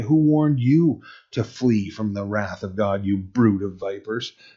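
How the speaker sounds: ordinary delivery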